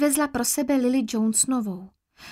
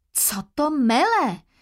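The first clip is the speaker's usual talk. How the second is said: sharp, severe, stern cry. A woman reacts to a girl's reproachful questions, exclaiming. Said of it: "Zvolala Marilla a přísně pohlédla".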